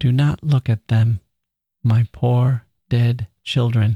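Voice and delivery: with tenderness, tender voice. A woman points to copybooks under her pillows, speaking tenderly. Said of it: "she said tenderly".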